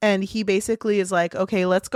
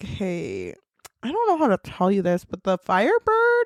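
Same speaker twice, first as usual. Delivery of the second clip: swooping, animated character voice going up and down. Retelling a scene, speaking as Bagra to Mal: voicing Bagra. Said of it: "Bagra's like".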